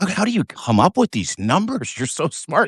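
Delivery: sycophantic, fawning, gushing, admiring reporter voice. Retelling a press moment, imitating reporters' fawning voices. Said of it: "you could hear it in the reporters' voices".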